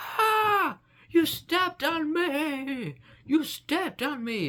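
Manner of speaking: very high, loud, screaming grass voice. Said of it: "the grass is not gonna start screaming at you, being like".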